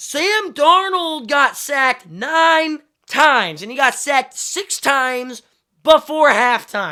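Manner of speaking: shrill, very loud, high-pitched outburst. Recapping a football wild card matchup for the audience, yelling. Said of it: "Sorry I'm yelling".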